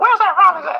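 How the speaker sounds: very high-pitched calling out. Recalling the day the legend called you out by name, do a high-pitched Willie Mays voice. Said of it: "that high pitched voice".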